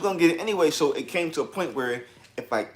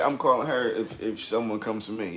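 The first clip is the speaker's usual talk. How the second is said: usual speaking voice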